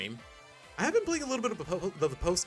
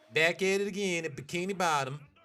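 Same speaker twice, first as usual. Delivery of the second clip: put-on Southern accent; 3 semitones higher than usual. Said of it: "what is it with me in the Southern accent?".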